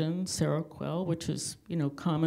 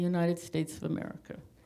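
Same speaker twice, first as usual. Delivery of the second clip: plain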